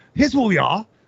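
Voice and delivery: put-on Australian accent, very high. Filming a bit for Patreon, in a put-on Australian accent. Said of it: "I don't know why I have English accent, uh, Australian accent".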